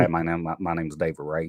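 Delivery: put-on older Alabama man's accent. Retelling a workday story, imitating David Ray. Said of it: "he sounds like this and from Alabama".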